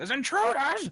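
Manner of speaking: loud roaring shout. Voicing an orc who drops the groceries: bellowing.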